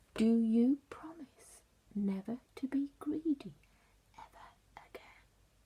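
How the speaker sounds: soft, hushed giant voice. Reading the story aloud, the narrator voices the giant: much quieter giant voice. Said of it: "said the giant in a much quieter voice".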